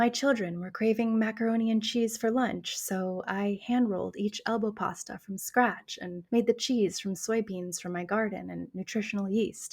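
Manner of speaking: soft, soothing ASMR-like voice. Imitating a line from a Nara Smith video: soothing ASMR-like Nara Smith voice. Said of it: "She talks in this very, like, very soothing, very almost A S M R-esque voice".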